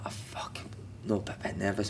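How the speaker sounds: soft, nervous, unvoiced whisper.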